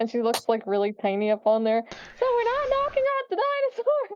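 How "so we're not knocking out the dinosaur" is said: very high-pitched shout that sounds far off. Voicing Hannah atop a dinosaur, yelling down: yelling from far away. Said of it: "yells from the top of the dinosaur".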